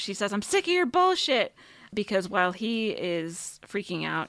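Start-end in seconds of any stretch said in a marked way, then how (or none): 0.3-1.5 put-on shrill yell, voice way up high. Recounting a scene where she yells at a man freaking out, retelling a yell. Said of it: "She yells".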